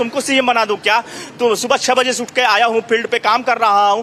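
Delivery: normal talking voice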